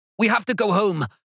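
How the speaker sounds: panicked, very high, voice cracking and breaking. Reading a story aloud, the character Spider speaks to Cam: panicked, voice cracking. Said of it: "Spider's voice cracked, and the panic in it".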